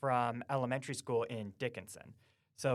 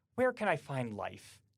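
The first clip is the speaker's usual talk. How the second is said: put-on exasperated kid voice, near a fit. Retelling a kid coming up to the front desk with a question: imitating an exasperated kid. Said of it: "with a very like like exasperated".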